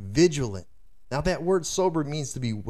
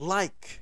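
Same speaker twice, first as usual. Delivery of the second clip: heavy stress on the word "like"; 5 semitones higher, 4 dB quieter than usual. Explaining a scripture verse to listeners, stress on 'like'. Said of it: "I want to emphasize that word like".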